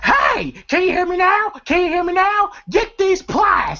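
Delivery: mock shrill, very high-pitched screaming holler. Retelling a movie scene where a character is left behind: imitating Money Mike screaming. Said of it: "And then Money Mike screaming".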